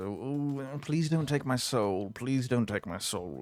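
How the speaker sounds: mock, imitated begging tone. Imitating the boring ones a devil deals with: mock begging. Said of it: "I don't like begging".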